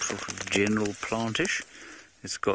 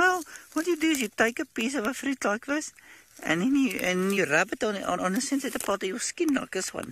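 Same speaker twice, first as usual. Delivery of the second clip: very high-pitched voice held throughout. Quoting what a man told the speaker, in a very high-pitched voice. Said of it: "He spoke with a very high voice like this".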